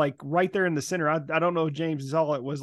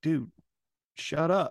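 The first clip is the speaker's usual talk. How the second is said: stage whisper, half-whispered. Retelling what a friend said at a booth: imitating a half-whisper. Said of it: "my friend whispered to me".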